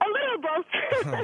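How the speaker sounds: high, teary laugh-cry through tears. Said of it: "are you crying or laughing?".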